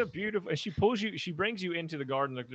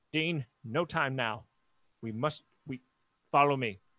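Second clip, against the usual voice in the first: put-on motherly voice. Narrating a story to the group, the speaker voices Misery, in Misery's mom voice. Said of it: "She got mom voice".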